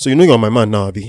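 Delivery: put-on Nigerian man's accent. Sharing a line from a Nigerian man, in a Nigerian accent. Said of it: "Here is from a Nigerian man".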